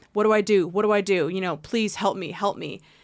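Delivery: put-on panicked voice. Retelling a call to property management, imitating own panic. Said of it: "And 'cause I'm panicking".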